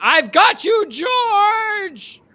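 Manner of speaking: very high, shrill, loud scream, "George" drawn out. Playing a character sprinting down a hallway toward a monster: screaming.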